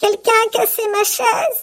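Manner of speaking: very high, squeaky, small bear voice. Narrator reading a bear story voices the little bear: Petit Ours's small voice. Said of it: "Petit ours dit de sa petite voix".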